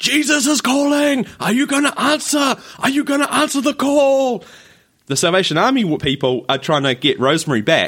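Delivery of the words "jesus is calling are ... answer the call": shrill, very high, relentless nonstop yelling. Retelling how a volunteer followed a couple down the street: imitating a woman yelling. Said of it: "she's yelling at him nonstop".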